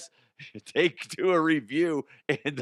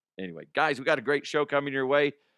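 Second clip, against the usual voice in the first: plain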